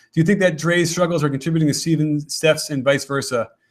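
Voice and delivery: ordinary talk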